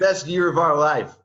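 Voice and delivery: dripping with irony. Calling this year the best of their lives: sarcastic. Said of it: "I'm being sarcastic".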